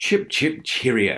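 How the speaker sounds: affected, laid-on British accent. Responding to news that people love these: British voice. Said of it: "your British voice".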